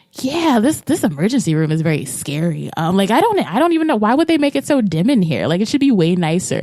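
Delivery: mock sarcastic griping. Retelling a phone call the night a grandmother died: retelling own sarcastic remarks. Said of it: "got very sarcastic".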